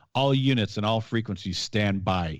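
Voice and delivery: ordinary talk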